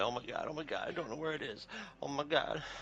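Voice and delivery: flustered, freaking-out babble, high and frantic. Telling a story about a woman in a panic: imitating someone freaking out. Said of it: "she's like freaking out".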